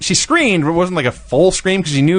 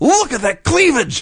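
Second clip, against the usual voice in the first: very high, sudden, excited blurted yell; 10 semitones higher than usual. Retelling what Mark Madden shouted about Tori, retelling Mark Madden shouting. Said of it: "Mark Madden just shouts".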